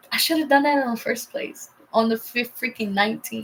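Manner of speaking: plain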